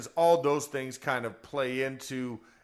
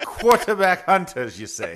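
very loud, swooping, put-on Jamaican accent; 6 semitones higher, 10 dB louder than usual. Host echoes a co-host's phrase back to him in a put-on jamaican accent. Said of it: "is that Irish or is that Jamaican?".

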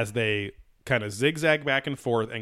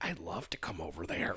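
put-on small raspy kid voice, whispered; 5 semitones lower, 11 dB quieter than usual. Describing how a man talks like the Kindergarten Cop kid, imitating raspy little voice. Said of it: "he has a real raspy little".

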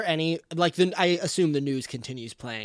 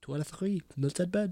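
quiet whisper, quieter; 6 dB quieter than usual. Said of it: "Very quietly".

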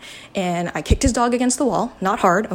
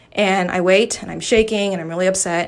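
ordinary talk, nothing marked

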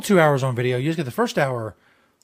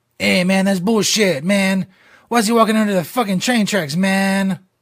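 stock Mexican accent, pitched up; 5 semitones higher, 3 dB louder than usual. Mocking an Instagram post about walking under train tracks, stereotypical Mexican voice. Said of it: "My stereotypical Mexican voice?".

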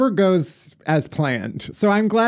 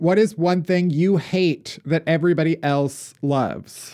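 ordinary talk, nothing marked

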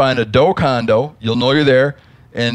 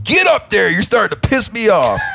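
mock high-pitched holler; 8 semitones higher than usual. Telling a trail story, the speaker repeats a man yelling at his rented horse, retelling a yell. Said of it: "He yelled".

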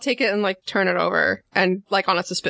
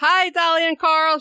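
slightly too loud and pitched up; 9 semitones higher than usual. Greeting two people through a talking-cat microphone, a touch too loud. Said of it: "She says it really, just like a touch too loud".

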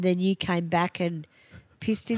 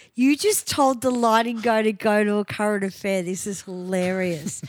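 ordinary talk, nothing marked

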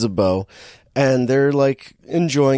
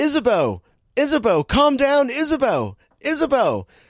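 acted, very high, swooping, repeated yelling; 12 semitones higher than usual. Retelling a movie scene, imitating Matthew Broderick yelling. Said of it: "just starts yelling".

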